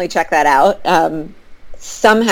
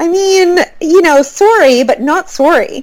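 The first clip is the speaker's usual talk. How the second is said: put-on Toronto accent, a best attempt; 11 semitones higher than usual. After talk of adorable accents, show off your best put-on Toronto accent. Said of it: "That was my best Toronto".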